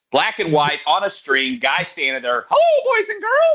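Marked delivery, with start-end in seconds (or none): 2.4-3.5 very high, cartoonish mouse character voice. Recalling a fifties children's show, voicing its host's greeting, in a Mickey Mouse voice. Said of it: "that's Mickey Mouse".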